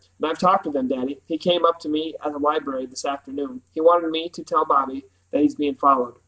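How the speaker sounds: ordinary delivery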